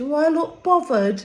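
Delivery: English accent, put on for show. The speaker throws in a bit of English accent. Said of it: "Bit of English for you there".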